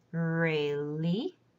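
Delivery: falling-rising tone on really. Teaching the third tone with an example word: dip-then-rise pitch on really. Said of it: "First part, you dip down, li, and then rising".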